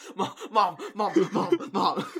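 winded, breathless, high, stammering, drawn-out calling. Retelling running down the stairs calling for their mom, acting out being out of breath. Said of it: "kind of like out of breath".

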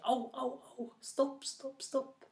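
very high-pitched yelps, crying out in pain. Loke, dragged over rocks by the eagle, shouts out. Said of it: "Han ropte".

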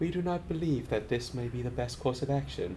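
eerie, hushed, telepathic-sounding alien voice. Describing how certain characters talk, the speaker does an eerie telepathic voice. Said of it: "it's this kind of like eerie telepathic-y voice".

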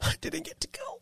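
mournful, sad, breathy whisper. The speaker tells a listener about missing a destination wedding: sad. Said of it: "you're very sad".

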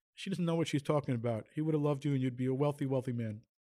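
normal talking voice

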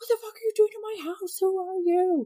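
put-on high-pitched, shrill, enraged, furious yelling. Woman retelling her husband confronting a stranger in their house, retelling his scream. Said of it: "he just starts screaming and he's like".

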